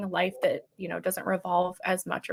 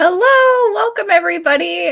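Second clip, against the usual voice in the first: raised, higher-pitched voice through barely held-in laughter; 11 semitones higher, 10 dB louder than usual. Opening a live Q and A after a joke, laughing while talking. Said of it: "still trying not to laugh".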